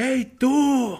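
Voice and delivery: big, echoing, very loud, very high shrill yell. Speaker re-enacting calling out to someone in a queue, retelling a shout. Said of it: "me valía madres y gritaba así enfrente".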